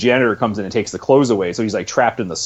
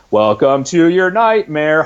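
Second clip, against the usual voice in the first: put-on American accent, much higher; 7 semitones higher, 4 dB louder than usual. Describing Gloria playing a witch, in Gloria's over-the-top American accent. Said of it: "American accent".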